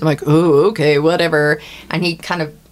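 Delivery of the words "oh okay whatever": offhand, sarcastic, dismissive brush-off. Retelling brushing off someone's warning in the er, with mock-sarcastic dismissal. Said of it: "we're super sarcastic in the ER".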